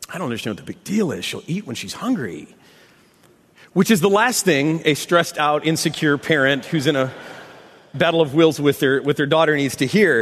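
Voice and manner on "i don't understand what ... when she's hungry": put-on muttering under breath, quieter. Retelling a mother-in-law's remark in the kitchen: imitating someone muttering under breath. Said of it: "she said under her breath".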